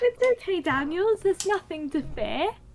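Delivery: eerily soothing, unsettling, creepy comforting tone. A beaked character in a tabletop game reassures Daniels, creepy smiling reassurance. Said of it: "I just smile at him creepily".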